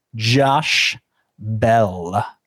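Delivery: confident, Bell drawn out. Saying the name again after a weird first try: with more confidence. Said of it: "try that again with a little more confidence".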